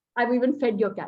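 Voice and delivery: normal talking voice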